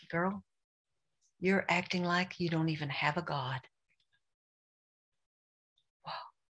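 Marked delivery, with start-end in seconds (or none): none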